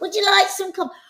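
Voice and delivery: loud, high-pitched speech. Mimicking how people talk to old people: imitating talking loudly to old people. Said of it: "that thing that people do with old people".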